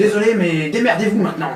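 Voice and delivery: brusque, dry, gruff and curt voice. Retelling a phone call, voicing the person on the line: gruff, curt voice. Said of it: "vous entendez une voix bourrue, quelque chose d'assez sec".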